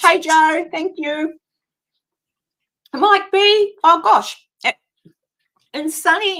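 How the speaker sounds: choking mid-speech, mouth full, high and slow. Welcoming people by name while choking on food while talking. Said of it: "I'm choking on a Tim Tam".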